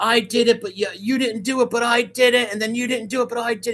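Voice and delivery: tripping over words. Retelling what someone said in a video, imitating someone stuttering. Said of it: "he's basically stumbling over his words, stuttering".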